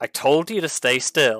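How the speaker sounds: very exasperated, at the end of patience. A game master voices Vondal calling out to the players, in a very exasperated tone. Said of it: "Vondal's voice in a very exasperated tone".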